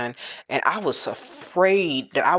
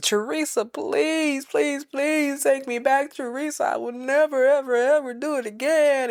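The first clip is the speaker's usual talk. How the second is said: mock weepy, pitched-up, tearful, pleading crying; 11 semitones higher than usual. Retelling a man begging his partner to take him back: imitating someone crying and pleading. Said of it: "crying and going on".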